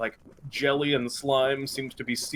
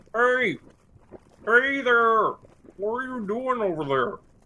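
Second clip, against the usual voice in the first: very high-pitched, drawn-out call from a distance; 9 semitones higher, 4 dB louder than usual. Voicing a city guard calling to the group on the drawbridge: guard calling out. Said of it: "the kind of guards are kind of calling out".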